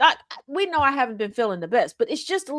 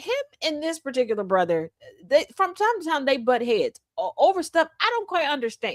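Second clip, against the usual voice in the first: plain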